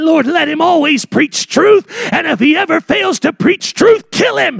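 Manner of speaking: put-on high, gruff, rough old preacher voice. Speaker quotes an old preacher's prayer; gruff old preacher voice. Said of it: "I hear the gruff voice of that old preacher".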